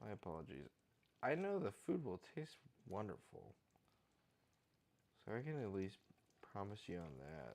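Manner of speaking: tired, low energy. Cooking and apologizing to the viewer: tired, low energy. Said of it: "this is pretty low energy".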